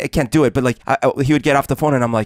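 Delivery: ordinary delivery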